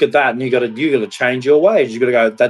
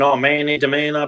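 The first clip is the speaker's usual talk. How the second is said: self-pitying, whiny whinge; 2 semitones higher than usual. Retelling a woman's complaint: imitating someone whinging and screaming. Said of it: "she's whinging and screaming".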